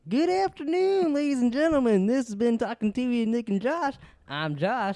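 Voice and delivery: loud cowboy voice pitched very high. Doing the show's sign-off with nick, sounding like a cowboy. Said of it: "How come I sound like a cowboy".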